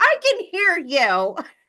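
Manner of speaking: very high, drawn-out yell. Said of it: "yelling back and forth".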